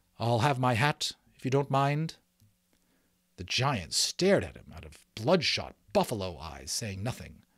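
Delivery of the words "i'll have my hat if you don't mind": hesitant, hesitating delivery. A man asks the giant for his hat back, hesitant. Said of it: "said hesitantly".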